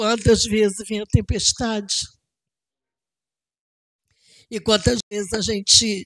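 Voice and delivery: moved, emotional voice. Addressing the brothers, pausing to apologize: emotional, moved. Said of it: "desculpa, eu tô emocionada".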